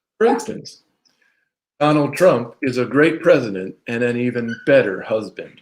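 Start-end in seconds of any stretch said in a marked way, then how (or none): 1.8-5.4 slow, heavily sarcastic praise. Giving an example of being sarcastic about the president: sarcastic. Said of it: "sarcastic too".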